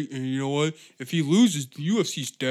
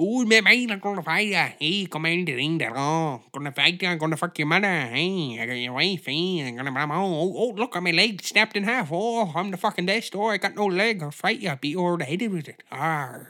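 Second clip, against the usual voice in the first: rambling little leprechaun man character voice; 3 semitones higher than usual. Mocking a fighter called a little leprechaun man, imitating the leprechaun man. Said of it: "Who's this little leprechaun man looking at?".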